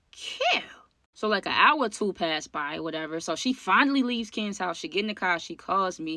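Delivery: ordinary talk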